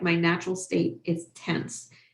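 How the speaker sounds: normal talking voice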